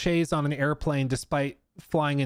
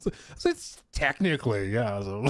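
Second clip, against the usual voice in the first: giggles breaking into speech, laughing through words; 4 semitones lower than usual. Trying to explain a joke with a straight face: laughing while talking. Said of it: "I can't keep a straight face".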